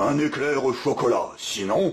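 threatening storybook wolf voice. Narrating a story where a wolf bursts into a bakery: wolf yelling. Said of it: "le loup entre dans la boulangerie de Madame Bonpain et hurle".

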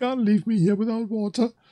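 high, whimpering, begging little cry. In a tabletop game, a soldier whose water is taken pleads, whimpering. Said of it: "he sort of whimpers a little bit and says".

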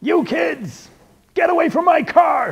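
very high, top-of-the-lungs, furious angry shout. Drawing a cartoon, the speaker voices the angry character yelling at us: angry yelling character. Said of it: "angry character who's yelling at us".

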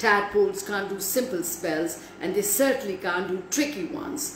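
plain reading voice

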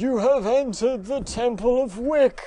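menacing, sinister dark wizard voice, pitched a touch high. Playing a voice that echoes through a game temple, in a Voldemort voice. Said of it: "It's Voldemort".

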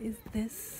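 very soft, hushed whisper.

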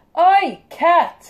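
very loud, very high, shrill yell. Speaker spots a cat mid-sentence, shouting at a cat. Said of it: "I didn't mean to shout at you".

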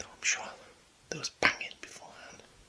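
soft, hushed whisper. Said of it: "I don't know why I'm whispering".

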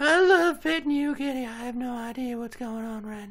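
very high, spaced-out put-on woman's voice. Telling a story about a woman holding a cat, then imitating her: imitating her petting the cat. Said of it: "Very good impression".

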